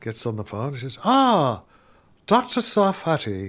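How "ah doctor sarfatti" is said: put-on slow, heavy Irish accent, laid on thick. Retelling a phone call to the Stanford Research Institute, Brendan O'Regan's thick Irish accent. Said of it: "a thick Irish accent".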